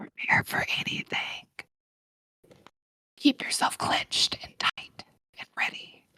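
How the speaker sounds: soft, unvoiced whisper under the breath.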